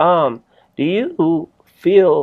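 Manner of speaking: voice cracking up into a high pitch. Starting to ask the other speaker a question, voice cracking. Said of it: "I don't know why my voice cracked".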